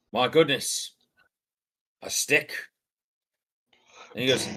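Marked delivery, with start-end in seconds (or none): 0.1-2.5 dismissive, unimpressed, slow. Voicing a character shown a blade he does not care about: unimpressed. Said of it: "he looks unimpressed and goes".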